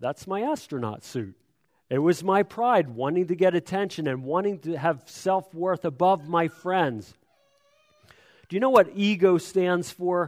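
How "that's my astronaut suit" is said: put-on calm tone, much quieter. Acting out his planned answer to friends, very calmly. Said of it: "I would just very calmly say".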